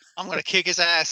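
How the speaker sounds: put-on angry demon voice. Joining in retelling the long arm and long leg's reaction to the monk: imitating an angry demon. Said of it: "how mad the long arm and long leg are at this monk".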